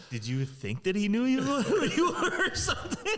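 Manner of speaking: high, disbelieving voice, spoken through laughter.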